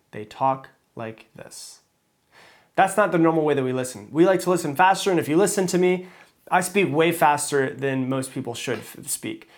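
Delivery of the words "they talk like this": very slow, drawn-out, breathy whisper. Demonstrating how people on Audible speak, speaking really slowly. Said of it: "they speak really slowly".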